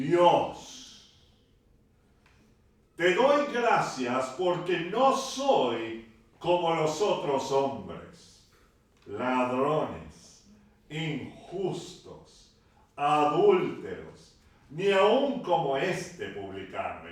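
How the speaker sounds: mock authoritative, loud, commanding voice. Preacher reads the Pharisee's prayer from the parable, commanding voice. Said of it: "pero con voz de mando".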